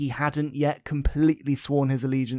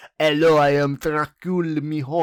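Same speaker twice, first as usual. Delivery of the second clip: bad put-on French accent, louder; 5 dB louder than usual. Imitating a show character who was french in a dub. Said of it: "That was not French".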